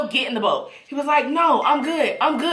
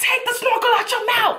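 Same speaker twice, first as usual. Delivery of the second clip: very high, shrill, urgent, angry yell; 11 semitones higher than usual. Retelling swimming toward someone in the water: imitating her own yell. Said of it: "I'm swimming to him and I'm yelling".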